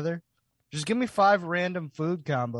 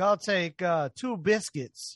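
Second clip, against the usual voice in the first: slow, put-on British accent; 2 semitones higher than usual. Imitating a UK person visiting Bojangles for the first time: imitating a UK person. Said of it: "And they're like".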